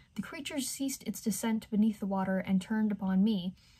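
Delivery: ordinary delivery, nothing marked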